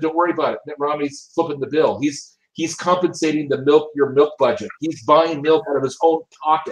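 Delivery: ordinary delivery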